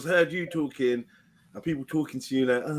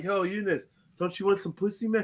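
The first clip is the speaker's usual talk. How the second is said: droopy, high, forlorn, sad-sounding voice; 5 semitones higher than usual. Imitating how everyone sounds talking to a friend: imitating a sad-sounding voice. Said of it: "everyone sounds sad trying to talk to Eunice".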